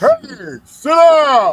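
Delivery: very loud, very high, booming voice. Speaker retelling a line from Enoch, imitating Enoch's booming voice. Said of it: "with Enoch's booming voice".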